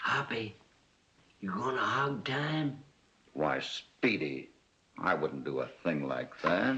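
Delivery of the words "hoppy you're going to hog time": whispering, much higher pitch. Addressing Hoppy just after a door opens, whispering.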